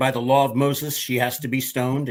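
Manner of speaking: normal talking voice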